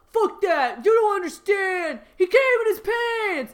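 very loud, high, shrill, shrieking scream. Reading a story aloud, voicing a character: screaming at the refs. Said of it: "screamed at the refs".

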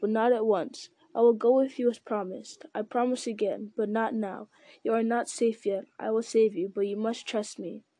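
ordinary delivery, nothing marked

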